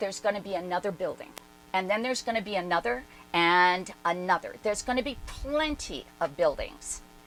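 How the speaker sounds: normal talking voice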